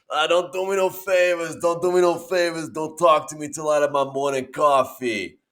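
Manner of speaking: put-on New York accent. Imitating a man from a TikTok video, thick New York accent. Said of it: "he's got like a great thick New York accent and he goes".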